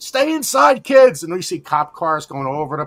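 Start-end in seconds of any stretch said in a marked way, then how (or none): 0.0-1.2 put-on yell, higher and louder. Retelling how the father yelled a warning: imitating father yelling. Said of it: "my father yelling".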